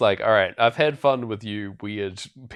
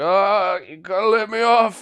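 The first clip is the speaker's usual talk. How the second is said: mock, very high, drawn-out, wasted drunk voice; 10 semitones higher, 5 dB louder than usual. Retelling a film scene of a man stumbling around on a bus: imitating a drunk man. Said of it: "as if he's, like, drunk off his face".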